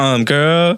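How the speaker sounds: sassy, cutting, snappy tone. Acting out a reply to a woman in the restroom: sassy snap. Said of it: "You gotta be sassy".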